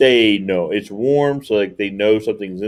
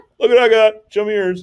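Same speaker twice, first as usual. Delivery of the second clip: put-on mountain lion voice, higher pitch; 11 semitones higher than usual. Joking about mountain lions on trail cams: put-on mountain lion voice. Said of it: "I gave mountain lions that voice".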